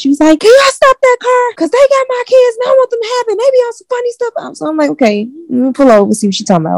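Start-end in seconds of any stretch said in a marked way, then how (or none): 0.4-4.6 put-on, very high, top-of-lungs pleading scream. Retelling being flagged down by a woman in her car, quoting her: imitating top-of-lungs screaming. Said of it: "She was like screaming at the top of her lungs".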